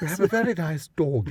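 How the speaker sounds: exaggerated put-on posh accent. Speaker answers another speaker's prompt in their most posh voice. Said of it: "in our most posh voice".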